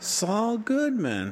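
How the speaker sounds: strange, warped inflection on Saul Goodman. Imitating how she said a name, weird inflection on 'Saul Goodman'. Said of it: "she's saying it in a very weird inflection, like".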